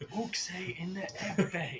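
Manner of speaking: slow stage half-whisper. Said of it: "I find it more fun to actually whisper".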